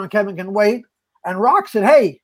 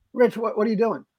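usual speaking voice

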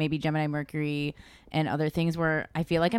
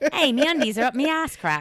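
put-on Australian ad-read voice, higher and louder; 8 semitones higher, 4 dB louder than usual. Joking about an underwear ad heard in Australian accent: mock Australian accent. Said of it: "inexplicably in an Australian accent".

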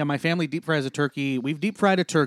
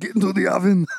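put-on Austrian accent, higher and louder; 4 semitones higher, 5 dB louder than usual. Joking about a smoked turkey: bad Arnold Schwarzenegger impression. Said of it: "Bad Arnold impressions".

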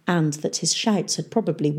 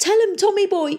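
very high-pitched, terrified whimper; 4 dB louder than usual. A man pleads with Tom to speak up for him, whimpering. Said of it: "he whimpered".

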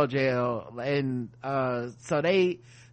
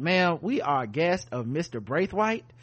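ordinary delivery

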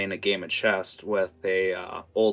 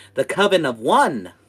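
put-on loud, very high little girl voice; 8 semitones higher, 8 dB louder than usual. Voicing a little girl who welcomes the player: little girl character voice. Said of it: "holds out one finger and goes".

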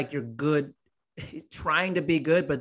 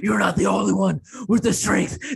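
put-on growling monster voice, higher and louder; 5 semitones higher, 8 dB louder than usual. Imitating Batman from the Nolan movies: Batman monster voice. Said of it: "he talked in his monster voice".

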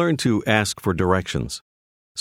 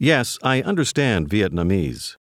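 normal talking voice

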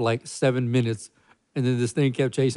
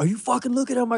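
mock furious aggression, higher pitch; 11 semitones higher than usual. Acting out a super aggressive man accusing someone of looking: imitating roid rage. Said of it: "roid rage".

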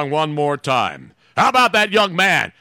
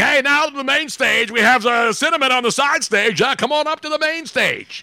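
club emcee announcer voice, pitched up; 7 semitones higher than usual. Saying what a young man's voice reminded them of: strip club announcer voice. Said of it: "I heard guy in the strip club saying".

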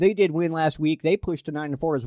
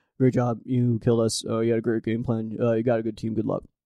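mumbled delivery with barely any enunciation; 5 semitones lower than usual. Reading a coach's post-game quote to another coach: Bill Belichick impression. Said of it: "That's my Bill Belichick".

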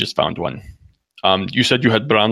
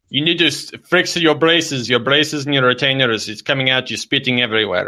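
put-on, high, exasperated, fed-up scolding voice; 5 semitones higher than usual. In a prank call, the caller apologizes for Junior: put-on voice scolding Junior.

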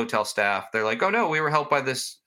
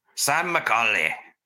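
poor, unconvincing attempt at a Scottish accent. Hosts choosing a voice for a ghost, one tries an accent: bad Scottish accent. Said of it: "That wasn't Scottish".

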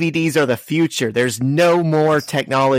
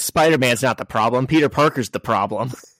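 ordinary delivery

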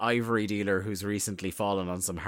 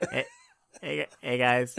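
put-on pleasant ordinary young guy voice, pitched up, swooping; 5 semitones higher than usual. Mocking a vampire wrestler who sounds ordinary: imitating Gangrel sounding like a regular dude. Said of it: "why does Gangrel just sound like a dude".

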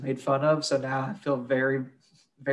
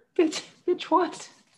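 put-on very high, squeaky, scared little child voice. Joking about how Hitler sounded, the speaker does Hitler as mock-scared little kid. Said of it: "like a scared little kid".

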